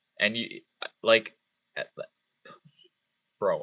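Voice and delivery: stammering, stuttering, stumbling over words and fillers. Reassuring a listener they are guaranteed an album copy, stuttering. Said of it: "I am stuttering so bad".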